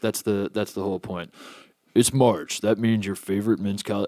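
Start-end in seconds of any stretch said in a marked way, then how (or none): 1.9-4.1 put-on gruff cowboy voice, lower and quieter. Reading a beer ad in a Sam Elliott impression. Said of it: "I'm gonna do a Sam Elliott impression for this".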